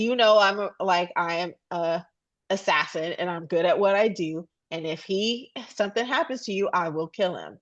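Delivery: normal talking voice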